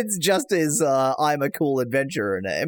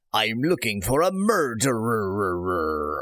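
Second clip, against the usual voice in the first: pirate voice with murderer long and drawn out; 4 semitones lower than usual. Voicing Valnar while reading game dialogue: Valnar pirate voice. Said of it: "trying to give him a, uh, piratical voice".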